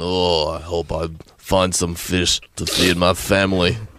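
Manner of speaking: deep put-on voice, bad Russian fisherman accent. Playing a russian fisherman out fishing: deep put-on voice, bad russian accent. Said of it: "You just went deep".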